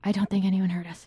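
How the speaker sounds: fast, hushed whisper. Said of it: "we should probably whisper".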